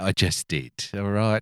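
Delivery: put-on dry, deadpan delivery in an English accent. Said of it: "I love the pommy way of being snarky".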